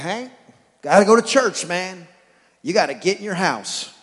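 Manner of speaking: acted strict prison-warden tone. Retelling what he tells his dog Hank, in a mock prison-warden tone. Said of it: "like the prison warden side of me shows back up".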